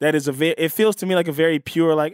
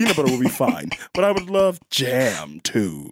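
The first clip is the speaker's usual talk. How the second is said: put-on smarmy rich-boy voice, lower; 4 semitones lower than usual. Doing a Chuck Bass impression in a contest: swarmy Chuck Bass impression. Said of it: "My Chuck Bass impression is a, a, more swarmy".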